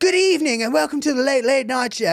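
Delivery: put-on extra-proper English accent. Mocking a late-night host greeting his audience, in a proper James Corden English accent. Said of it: "he puts on a more proper English accent".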